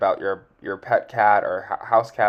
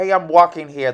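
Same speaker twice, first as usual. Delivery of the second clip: hurried, loud, pitched-up New York street accent; 7 semitones higher, 7 dB louder than usual. Describing someone's astrology energy, the speaker does a New Yorker voice. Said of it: "like New Yorker voice".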